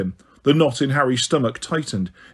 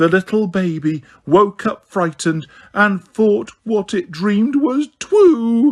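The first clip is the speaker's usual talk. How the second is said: high, stretched, horrible mocking baby talk; 6 semitones higher than usual. Reading a woman's line as she mimics Harry, in a horrible mock baby voice. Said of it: "in a horrible mock baby voice".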